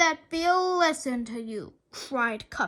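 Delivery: ordinary delivery, nothing marked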